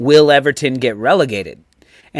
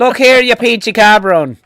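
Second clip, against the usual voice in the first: loud, high-pitched put-on Irish Mexican accent; 7 semitones higher, 5 dB louder than usual. Imitating Rafa talking to a player: Rafa in Irish Mexican accent.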